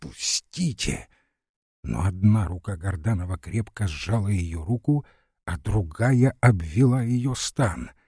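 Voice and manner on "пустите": breathless, gasping whisper, much quieter. Larisa lunges forward at Gordanov with a breathless whisper. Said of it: "прошептала, задыхаясь".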